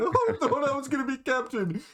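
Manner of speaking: high, tearful crying voice, blubbering. Voicing a contestant running out of the tent: crying while talking. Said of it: "run out of the tent crying".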